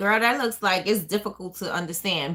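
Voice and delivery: ordinary talk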